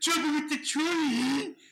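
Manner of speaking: shrill, frustrated, very high, loud, drawn-out yell. Retelling yelling a game character's line back at it: imitating own past yelling. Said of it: "I just yell what he's saying back".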